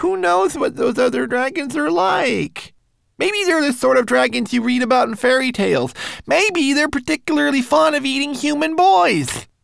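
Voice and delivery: very high, loud, anxious worried wail. Twig-like speaks to the rat about the boy: worried wailing. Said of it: "wailed Twig-like".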